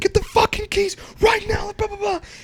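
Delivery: acted-out furious, angry screaming yell. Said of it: "he's, like, yelling, bro".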